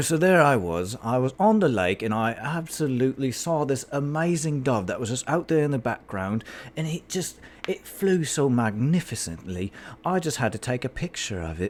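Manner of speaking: put-on British accent with every word leaned on. Demonstrating an accent the speaker has practised a lot: put-on British accent. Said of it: "British accents are something that I".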